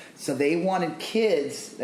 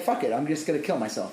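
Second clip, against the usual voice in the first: plain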